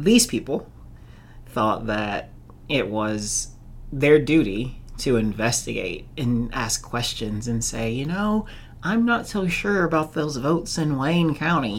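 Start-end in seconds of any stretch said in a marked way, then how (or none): 7.9-11.8 mock Southern accent, pitched up. Quoting people who felt it their duty to ask questions: mock southern accent. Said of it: "making fun of like Southern people".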